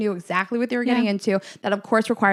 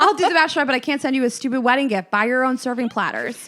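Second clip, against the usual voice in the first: mock rude tone, dripping with attitude; 3 semitones higher than usual. Acting out a reply to a bride's gift request: mock rude tone. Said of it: "That's tone".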